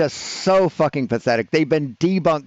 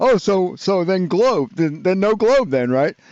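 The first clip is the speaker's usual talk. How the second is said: taunting, childish, mocking kid-like voice; 4 semitones higher than usual. Mocking an opponent's repeated question in a debate: mocking imitation, sounding like a child. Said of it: "That just makes you sound like a fucking child".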